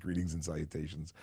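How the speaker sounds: ordinary talk, nothing marked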